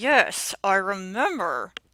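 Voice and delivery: very loud, forced out through clenched, gritted teeth. Narrator voicing Hilda's reply to Alan, said through gritted teeth. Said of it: "she said through gritted teeth".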